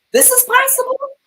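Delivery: very high-pitched stunned disbelief. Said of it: "where I'm like".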